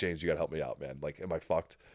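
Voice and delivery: worried, panicky, pleading voice. Retelling calling james for help: imitating own pleading self. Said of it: "and I'm like".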